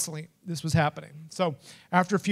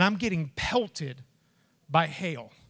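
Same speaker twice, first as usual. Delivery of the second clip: ordinary delivery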